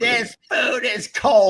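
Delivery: put-on fed-up, high-pitched screaming. Imitating a woman complaining at a Christmas party, imitating Golda screaming. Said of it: "she's screaming".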